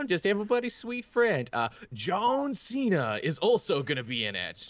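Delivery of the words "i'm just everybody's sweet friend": very high, light, ungruff voice. Showing how a huge character talks instead of gruff: Ron Funches voice. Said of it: "he speaks like Ron Funches".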